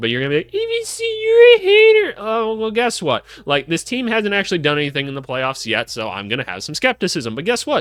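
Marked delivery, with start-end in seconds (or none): 0.5-2.1 very high, very slow dopey dum-dum voice. Imitating viewers calling the speaker a hater: imitating fans in a dumb voice. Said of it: "dum-dum voice a lot today".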